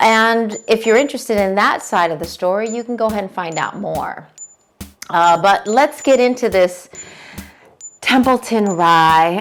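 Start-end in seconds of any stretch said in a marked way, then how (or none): 5.4-9.4 sour, disappointed, disgusted, let-down tone, drawn-out Rye. Starting to review a whiskey: disgust and disappointment. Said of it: "that's disgust and disappointment in my voice".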